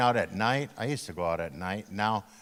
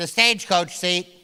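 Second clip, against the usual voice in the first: teasing, high, raised tiny little voice; 9 semitones higher, 6 dB louder than usual. Retelling a brother's airport joke in tiny talk: tiny talk voice. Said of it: "So I did tiny talk".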